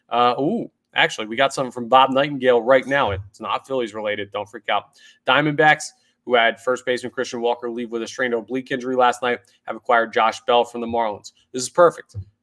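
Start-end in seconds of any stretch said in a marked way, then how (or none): 11.5-12.1 loud, dry, sour sarcastic tone. Reacting to news of a trade that helps an upcoming opponent: sarcastic. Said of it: "I'm being sarcastic".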